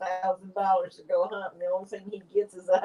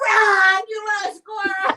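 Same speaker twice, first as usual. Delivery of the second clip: very shrill, very loud shriek, "run" stretched out; 13 semitones higher, 8 dB louder than usual. Retelling a squirrel hunting trip, imitating her own scream. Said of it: "I screamed out".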